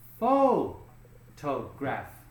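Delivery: PHO in photograph stressed, slow and drawn out. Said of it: "it goes here".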